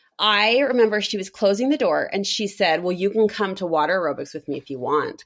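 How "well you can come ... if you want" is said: acted-out sarcastic tone. Retelling what a lady said while closing the door: imitating a sarcastic offer. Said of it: "kind of sarcastically".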